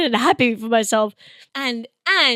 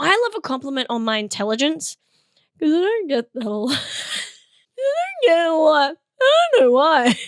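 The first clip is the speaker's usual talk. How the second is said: weird, dumpy, hoarse, swooping voice, nearly gone; 3 semitones higher than usual. Speaker discussing compliments, their usual voice gone: lost voice. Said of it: "I've lost my voice and my usual whiny voice has gone into this weird dumpy".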